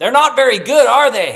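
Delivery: loud, high-pitched sudden blurt. Retelling what a grandmother said during a performance: imitating grandma saying it loudly. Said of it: "without filter and as loud as she can".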